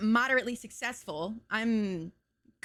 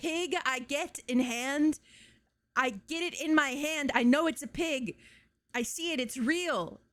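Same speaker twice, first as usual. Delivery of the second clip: slow, choppy, halting broken English, simple words; 4 semitones higher than usual. Retelling an old video of a lady: imitating a lady's broken English. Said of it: "I don't wanna say broken English".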